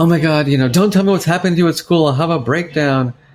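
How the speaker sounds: high, frantic, fretful, anxious panic. Retelling an anxious mother's words: imitating anxious mother. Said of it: "my mother was always anxious and she was always having a nervous breakdown".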